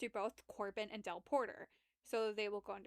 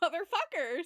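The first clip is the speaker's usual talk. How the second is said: very loud, high-pitched yelled swear word; 6 semitones higher, 8 dB louder than usual. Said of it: "And he's like".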